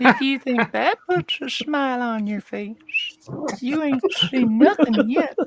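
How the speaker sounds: suggestive put-on character voice. Answering a compliment on the show, in the Herbert voice. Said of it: "just saying it in that voice changes the meaning".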